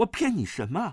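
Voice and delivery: surprised tone. Duan Yu, accused of lying by Murong Fu, asks back, surprised. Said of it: "段誉奇道".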